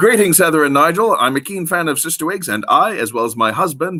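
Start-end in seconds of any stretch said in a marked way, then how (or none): none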